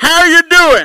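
shrill, very loud and high-pitched voice. Retelling a preacher walking up at a restaurant: imitating a loud greeting. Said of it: "Real loud".

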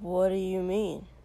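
slurred, slurring, forceful tone. Shoto, responding to Kotsky, demanding with a slur. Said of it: "Shoto demanded with a slur".

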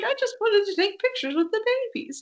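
very high-pitched, timid voice. Repeating the governor's line again: timid Don Knotts impression. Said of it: "not confident in your Don Knotts impression".

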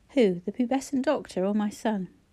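ordinary delivery

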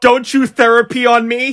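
abrupt shouted outburst. Telling a story about a man who started yelling, imitating him yelling. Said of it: "starts yelling".

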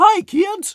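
very high-pitched, very loud, shrill booming clown voice. Describing the voice he created for a clown character; clown voice. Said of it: "I basically just started doing a clown voice like".

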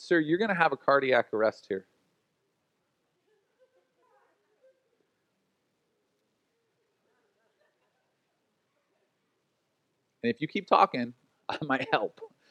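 courteous, polite, sing-song and swooping delivery. Retelling a parking-lot clash, quoting own words to a screaming man, retelling own polite reply. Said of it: "I just politely looked at him and I said".

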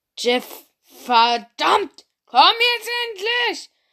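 very loud, high-pitched bellow. Alessia calls up to Jeff from downstairs, bellowing. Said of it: "brüllte Alessia von unten".

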